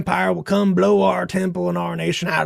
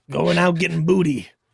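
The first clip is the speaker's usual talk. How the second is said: put-on pirate voice, swashbuckler style, laid on. Playing a swashbuckler in costume: pirate voice. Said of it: "We're swashbucklers".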